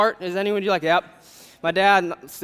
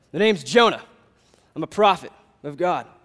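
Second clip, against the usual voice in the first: mock very masculine voice; 2 semitones lower than usual. Voicing Jonah as he first speaks in the story, super manly Jonah voice. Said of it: "Just super manly voice".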